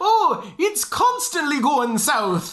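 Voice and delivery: high, slow bad Irish leprechaun-type accent. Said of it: "let's go Irish flavor".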